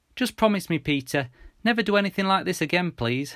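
high, earnest pleading tone. Reading Mum asking her son for a promise, pleading. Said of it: "Mum pleaded".

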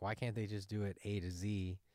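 usual speaking voice

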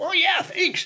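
put-on Southern colonel voice. Retelling what an admired man said in the shower: Colonel Sanders voice. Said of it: "kind of a Colonel Sanders".

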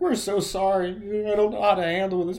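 play-acted loud, high crying out through sobs. Imagining clone troopers apologizing as they shoot him, mock sobbing. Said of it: "a group of them sobbing".

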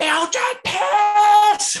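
very high, shrill, loud screech, very close up. Retelling how a stranger on the street screamed into their face: retold scream. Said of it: "and just start screaming".

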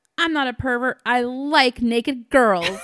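loud, proud, brash, unashamed tone. Retelling a movie scene, voicing the little brother: imitating a brother, loud and proud. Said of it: "loud and proud".

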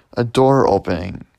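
ordinary delivery, nothing marked

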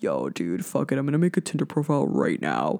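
very deep, low bro voice. Mocking someone lazily making a tinder profile in bed: imitating a dude in a deep voice. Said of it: "the deep voice came out".

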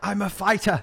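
put-on Irish accent, high pitched. Speaker quoting a woman from a meme to a friend, imitating an Irish accent. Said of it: "No, it's an Irish accent".

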